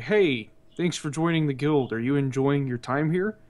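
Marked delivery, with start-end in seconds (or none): none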